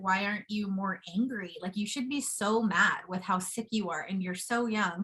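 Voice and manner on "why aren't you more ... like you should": plain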